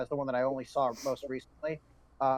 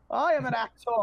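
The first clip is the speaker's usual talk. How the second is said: lofty, pitched-up, declaiming stage-actor voice; 10 semitones higher, 4 dB louder than usual. Describing a show's cast, speaker quotes the character: thespian Clayface voice. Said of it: "he's playing thespian Clayface".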